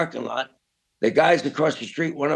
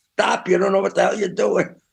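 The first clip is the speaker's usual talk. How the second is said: mock, raspy, rough, high-pitched hollering shout; 5 semitones higher, 4 dB louder than usual. Retelling a friend running behind him: imitating someone hollering.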